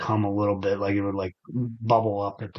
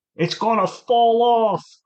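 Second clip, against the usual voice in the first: put-on yell, higher and louder; 13 semitones higher, 7 dB louder than usual. Retelling how a grandfather used to yell about the bathroom: imitating grandfather yelling. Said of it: "Saying that in his voice".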